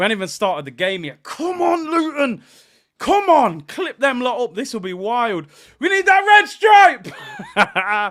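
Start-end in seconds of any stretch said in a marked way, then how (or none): 1.2-8.1 loud, overexcited, hyped-up, drawn-out delivery. Urging the team on before the game starts: hyped up. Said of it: "I'm trying to stay calm. I'm hyped".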